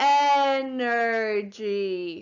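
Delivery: slowly sounding out, drawn out. Leading a spelling lesson, the speaker models the word for repeating, said slowly. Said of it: "say the word slowly".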